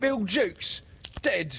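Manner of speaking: very high, shocked, startled outcry. Startled pirates reply to a fellow pirate's report: startled cry. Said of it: "Cried the startled pirates".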